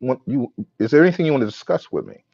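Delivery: normal talking voice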